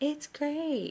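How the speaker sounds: laid-back, low-key, mellow, quiet, a touch high. Retelling the dad's reply to food made for him: imitating a mellow, quiet reply. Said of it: "such a mellow".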